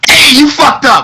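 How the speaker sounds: mock outraged, very high, loud indignant yell.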